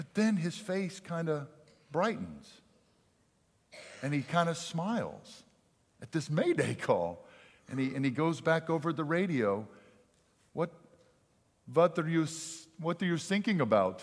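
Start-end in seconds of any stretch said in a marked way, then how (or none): 10.5-14.0 thick put-on German accent, higher. Telling a story, the speaker quotes the man answering a Mayday call in thick German accent. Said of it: "with a very thick German accent".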